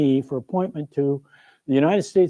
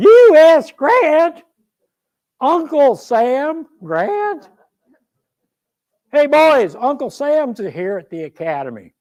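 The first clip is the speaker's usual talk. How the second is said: put-on very high, drawn-out yell in Western Ohio accent; 10 semitones higher, 6 dB louder than usual. Retelling a shout from across the parade ground: imitating William Tecumseh Sherman yelling, Western Ohio accent. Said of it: "this Western Ohio accented voice yells out".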